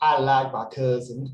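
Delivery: loud, put-on Southern accent, Kentucky style. Acting out an imagined person's line, in a southern accent. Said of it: "You have to say it with a southern accent too".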